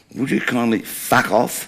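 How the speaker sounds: put-on blunt, dismissive delivery, said very loudly. Retelling a rude reply to a woman at a football game: retelling saying it very loudly. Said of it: "very loudly".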